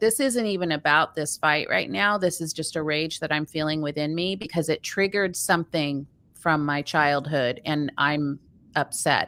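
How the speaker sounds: ordinary talk, nothing marked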